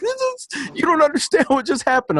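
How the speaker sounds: very high-pitched shriek of disbelief, screaming. Retelling his reply to his wife, who told him to shut up, retelling his own scream. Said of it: "and I was screaming".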